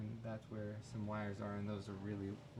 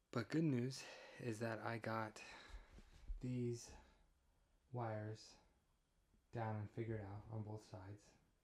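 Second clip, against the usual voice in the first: quiet, hushed, tired and weary voice; 3 dB quieter than usual. Just down from the attic, giving an update on the wiring, talking quietly and tired. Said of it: "I'm talk- talking quietly because it's quiet and I am tired".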